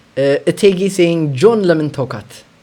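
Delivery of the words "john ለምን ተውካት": plain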